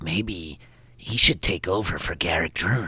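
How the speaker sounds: whispered small creature voice. Voicing a kobold who speaks to the others about the professor: kobold whispering. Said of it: "you hear one of them whisper in Draconic".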